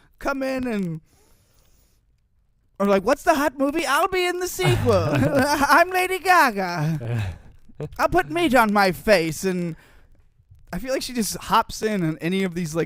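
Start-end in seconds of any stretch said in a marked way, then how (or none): 3.0-9.5 high, loud, swooping, drawn-out voice. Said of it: "I like how good your impression is".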